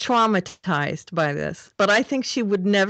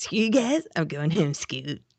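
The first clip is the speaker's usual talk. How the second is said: put-on cartoon kid voice, lower pitch; 3 semitones lower, 4 dB quieter than usual. Naming the episode's A story in a quote: Cartman voice. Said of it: "the Cartman impression".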